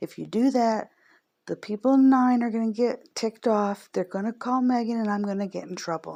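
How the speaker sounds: pretty loud, shouted yelling. Retelling yelling at mom from the car window: retelling own yell. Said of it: "I had the window down and I yelled".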